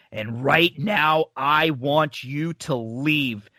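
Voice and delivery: put-on slow scary voice. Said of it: "saying this slow and scary".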